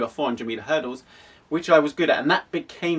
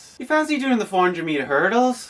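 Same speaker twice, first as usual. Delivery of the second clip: put-on pitched-up Irish accent; 6 semitones higher than usual. Retelling what his coach said to him: irish accent. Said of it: "in my best Irish accent".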